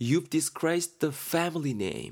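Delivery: disgraced stressed.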